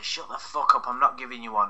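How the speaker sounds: ordinary talk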